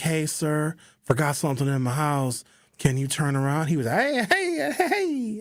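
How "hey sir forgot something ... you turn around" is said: put-on nice, mock-sweet polite voice. Retelling asking an Uber driver to turn around, in a put-on nice polite tone. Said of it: "I had my nice tone of voice".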